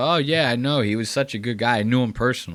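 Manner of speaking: casual, nonchalant, offhand throwaway tone. Imitating how real friends mention knowing someone, imitating a nonchalant, offhand tone. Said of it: "they say it like that. They just nonchalantly".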